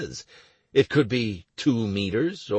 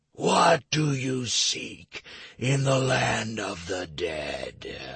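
drawn-out, snakelike, malevolent, menacing whisper. Narrator reading a voice that sounds like a speaking giant snake, drawn-out malevolent whisper. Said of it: "a drawn-out, malevolent whisper".

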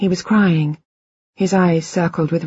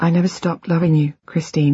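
plain

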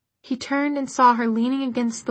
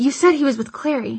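usual speaking voice

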